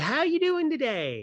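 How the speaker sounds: cheery, very high-pitched, chirpy voice. Retelling the cashier greeting them at the register, imitating a chirpy voice. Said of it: "in a chirpy voice said".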